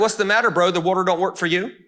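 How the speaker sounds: mocking, sarcastic taunting jab. Retelling a story about Jesus and a paralyzed man: imitating a sarcastic tone. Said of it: "And he's sarcastic".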